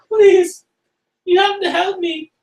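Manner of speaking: very high-pitched, slow, drawn-out begging. Voicing a woman who smothers a player and begs for help: pleading woman character. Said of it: "she's like".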